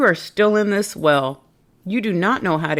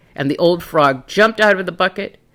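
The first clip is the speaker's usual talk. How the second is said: ordinary delivery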